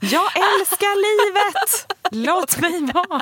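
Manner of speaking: very high, very slow, drawn-out yell. Retelling what she shouts back when people question her dancing: retelling her own shout. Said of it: "Jag bara skriker det tillbaka".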